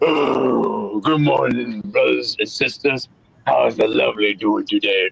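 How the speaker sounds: rough, creaky put-on voice, oh drawn out. Greeting listeners in a borrowed voice: D-Man voice. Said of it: "In my, uh, D-Man voice".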